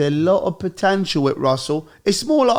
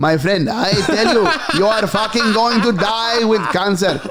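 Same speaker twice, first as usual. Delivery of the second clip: usual speaking voice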